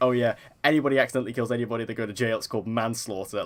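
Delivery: dry, flatly delivered deadpan sarcasm. Retelling a film scene's reply line: imitating Brad Pitt's sarcastic line. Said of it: "Brad Pitt just so sarcastically".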